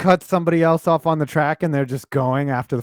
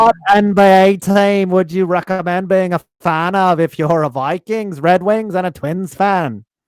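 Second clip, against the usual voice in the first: put-on Australian accent sliding into an Irish sound. Podcast host reading a viewer's chat question aloud: put-on Australian accent. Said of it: "chat in an Australian accent".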